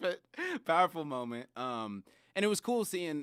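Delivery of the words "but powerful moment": talking while still giggling, laughing through words. Recapping a moment from a challenge with the others: laughing while talking.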